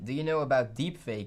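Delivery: ordinary talk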